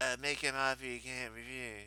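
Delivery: very soft, under the breath. Quoting the famous line of the Godfather in Brando's voice: imitating Brando as the Godfather. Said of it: "You sound like, um, you sound like the old dude on Soap Dish".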